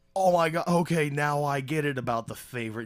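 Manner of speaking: high, loud excited gasp, thrilled.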